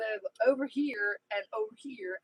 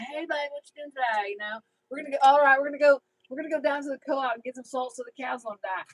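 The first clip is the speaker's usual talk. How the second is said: Jersey accent tinged with Tennessee; 3 semitones higher, 4 dB louder than usual. Talking about people in Tennessee and showing own accent, Jersey-Tennessee accent. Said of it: "I do have a Jersey, Tennessee accent".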